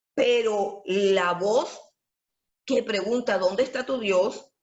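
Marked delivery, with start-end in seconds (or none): none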